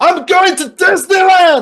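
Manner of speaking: very high-pitched, loud, slow yell. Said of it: "he just yells".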